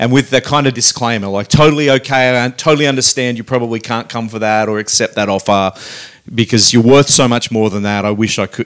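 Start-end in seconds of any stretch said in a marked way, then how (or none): none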